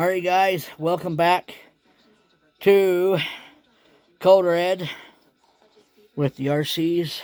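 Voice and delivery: winded, out of breath. Speaker welcoming viewers back after driving a Jeep around outside: winded. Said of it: "sorry, I'm winded".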